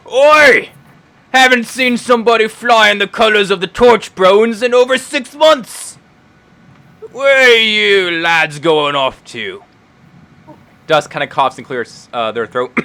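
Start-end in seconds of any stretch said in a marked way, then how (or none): 0.1-9.6 loud, high dwarven pirate captain character voice. Voicing a short dwarven pirate captain greeting the crew: short dwarven pirate captain voice. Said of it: "a very short dwarven man, uh, who walks up and says".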